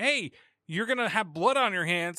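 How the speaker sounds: ordinary talk, nothing marked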